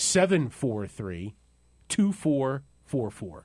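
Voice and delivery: slow delivery, said slowly. Host giving out a phone number after being asked, saying it slowly.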